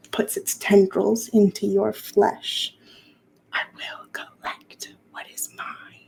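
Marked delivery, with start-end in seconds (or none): 3.5-5.9 menacing, barely audible whisper, very close. Narrating a game, voicing her as she speaks into your ear: whispering in your ear. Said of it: "Her voice whispers in your ear".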